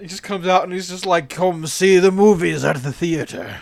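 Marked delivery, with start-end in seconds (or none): 1.3-3.6 slow, fattened-up voice. Imagining Orson Welles back from the dead inviting people to theaters: fat Orson Welles voice. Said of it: "my fatter voice".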